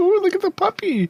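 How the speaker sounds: very high, giddy schoolgirl squeal, gushing. Teasing two players cooing over a wolf they think is a puppy, imitating giddy schoolgirls. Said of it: "like getting like giddy schoolgirls".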